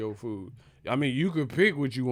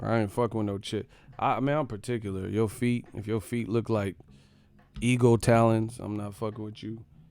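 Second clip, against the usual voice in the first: ordinary delivery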